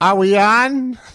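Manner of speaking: very high, loud, echoed delivery. Quoting how both shows started, imitating the other speaker. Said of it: "Is that your impression of me?".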